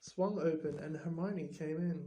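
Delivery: plain reading voice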